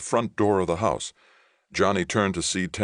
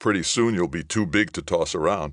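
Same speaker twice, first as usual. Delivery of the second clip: ordinary delivery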